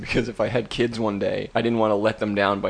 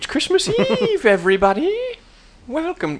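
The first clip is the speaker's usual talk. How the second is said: very high, shrill, sing-song, swooping witch voice; 5 dB louder than usual. Welcoming everybody on christmas eve, in a witch's voice. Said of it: "I don't know why I said that in a witch's voice".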